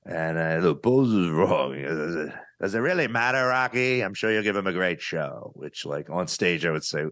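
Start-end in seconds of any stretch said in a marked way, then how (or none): 0.6-5.5 breezy, falsely nice, sweetly dismissive tone. Retelling a Rocky scene, imitating the Rocky promoter. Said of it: "I do that impression in the special".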